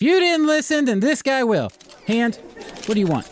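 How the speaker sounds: put-on Southern American accent. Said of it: "I keep going back to a Southern accent".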